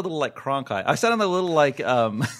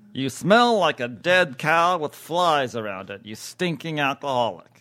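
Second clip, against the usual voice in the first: put-on TV news anchor delivery. Acting out a bitter old newscaster insulting a bar patron: David Brinkley voice. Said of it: "It looks like Brinkley shits on bars".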